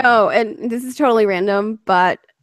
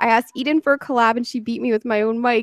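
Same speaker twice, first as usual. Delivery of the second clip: ordinary delivery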